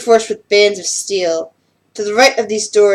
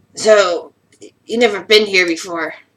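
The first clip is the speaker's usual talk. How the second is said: rough, gruff voice of a scaly beast. Voicing a wolf-furred creature questioning a newcomer: gruff voice. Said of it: "despite the gruff voice".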